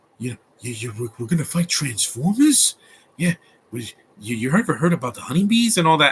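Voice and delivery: warped, dazed, halting talk, stammering and repeating words. Retelling a movie scene, imitating Mark Wahlberg: spaced-out Mark Wahlberg impression. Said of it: "And then Mark Wahlberg's like".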